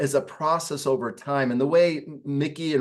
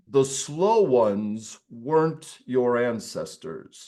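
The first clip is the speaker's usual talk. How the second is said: voice dropped down deep; 3 semitones lower than usual. Quoting what Richard would say, in Richard's deep voice. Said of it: "Richard would say in a deep voice".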